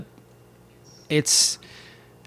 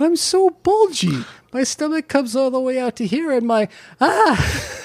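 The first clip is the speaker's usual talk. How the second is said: much higher cartoon dad voice. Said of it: "he's like".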